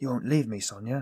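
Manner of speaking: plain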